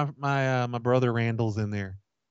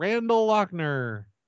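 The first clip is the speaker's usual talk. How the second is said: long, stretched-out yelling. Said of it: "just yell out".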